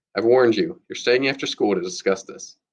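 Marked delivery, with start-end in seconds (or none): none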